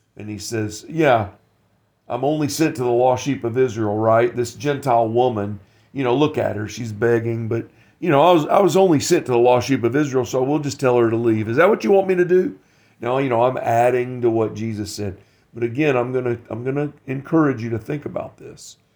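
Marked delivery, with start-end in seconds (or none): none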